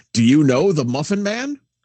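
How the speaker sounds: big put-on announcing voice. Retelling a voice heard on being woken up, in a big voice. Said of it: "somebody with a big voice going".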